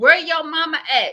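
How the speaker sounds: upset screaming, hollered. Retelling what a woman kept shouting during a fight: imitating someone screaming. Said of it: "she was the whole time screaming".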